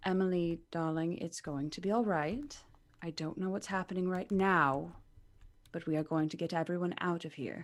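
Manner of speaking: quiet, soft, soothing hushed stage whisper. In the game, the speaker's character, next to Emily, comforts her, half-whispering. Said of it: "I will whisper to her".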